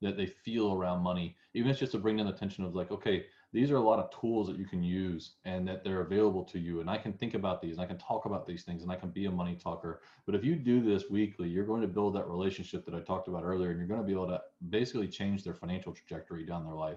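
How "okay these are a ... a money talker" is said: usual speaking voice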